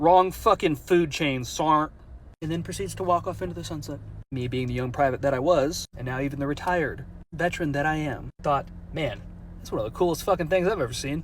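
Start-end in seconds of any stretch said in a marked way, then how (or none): none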